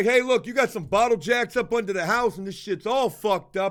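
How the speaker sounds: mock-aggressive put-on voice. Telling a story about a guy he dislikes talking with, mock-aggressive. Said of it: "he's getting kind of like aggressive".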